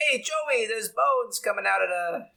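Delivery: very high, put-on typical New York accent. Act out the worker you pictured when the bulldozer was described, as a typical New Yorker impression. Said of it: "I pictured like a typical New Yorker".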